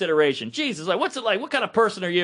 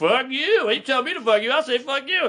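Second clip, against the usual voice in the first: put-on cantankerous, combative old man voice; 3 semitones higher than usual. Retelling a man in the crowd cursing back at him, old man impression. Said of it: "he's doing like the old man".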